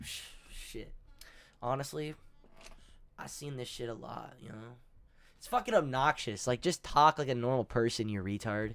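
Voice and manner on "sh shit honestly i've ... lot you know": very quiet, breathy, put-on chill teen voice. Mocking how another speaker talks: mocking nonchalant put-on chill voice. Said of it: "nonchalant, uh, teenagers that are trying to act chill".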